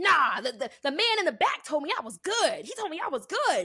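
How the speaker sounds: insistent, high-pitched screaming. Retelling a passenger screaming at a lady in the boarding line, imitating a man screaming. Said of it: "Like literally screaming at this lady".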